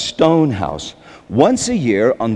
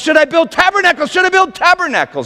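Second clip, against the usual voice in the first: put-on, frantic, panicked, very high-pitched yell. Retelling a Bible scene where a disciple freaks out, retelling a panicked yell. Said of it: "He begins to yell".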